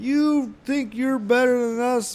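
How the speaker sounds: high-pitched, slow, whiny mock yell.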